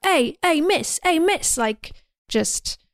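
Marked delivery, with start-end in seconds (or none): 0.0-1.6 put-on jeering, taunting British accent, pitched up. Retelling a film scene where a teen follows her: imitating a taunting British teen. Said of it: "kind of taunting her".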